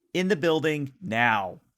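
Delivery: loud shouting. A character dodges an attack and shouts at the others: shouting. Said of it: "she kind of shouts at the others".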